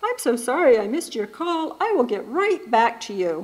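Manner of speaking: cheery voicemail voice. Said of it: "this cheery voice".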